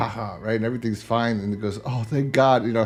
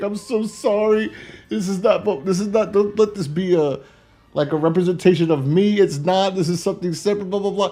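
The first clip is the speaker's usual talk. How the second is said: weepy, tearful, pleading, crying voice; 9 semitones higher than usual. Retelling a tv episode where the character starts crying: imitating a character crying. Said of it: "And he starts crying".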